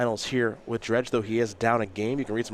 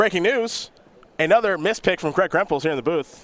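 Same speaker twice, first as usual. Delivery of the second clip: loud, overly enthusiastic, overexcited delivery; 7 semitones higher, 5 dB louder than usual. Commentator in the booth announcing another mispick, with way too much enthusiasm. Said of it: "You said that with way too much enthusiasm".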